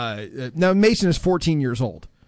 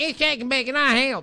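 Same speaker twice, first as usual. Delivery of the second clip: put-on imitation of a woman's way of talking; 10 semitones higher than usual. Warning Mason to stay away from women like M J: imitating M J. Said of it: "she talks like this".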